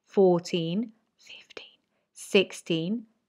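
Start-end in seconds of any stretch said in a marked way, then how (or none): 1.2-1.8 soft whispered voice. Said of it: "whisper the ones, the odd numbers".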